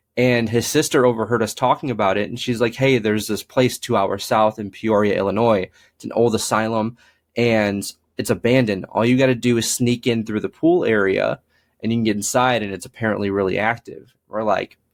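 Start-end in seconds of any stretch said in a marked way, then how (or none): none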